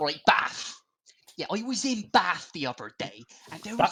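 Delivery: put-on weird mixed Somerset West Country accent, sing-song. Riffing with the others about Bath: weird hybrid accent. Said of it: "that's a very weird hybrid accent".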